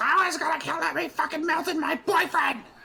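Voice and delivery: very high, raging scream. Playing a character who just lost her boyfriend in battle: screaming into the darkness. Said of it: "screams into the darkness".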